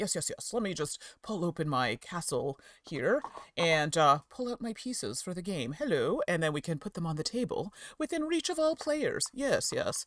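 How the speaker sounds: all-official, formal voice. Showing how players sound sitting down at the game table, official game-table voice. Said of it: "that's how I sound all official".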